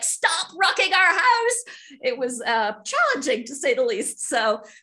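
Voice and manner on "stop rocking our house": shrill, very high, loud yell. Describing working inside a rocking RV, retelling own shout. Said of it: "I'm shouting like".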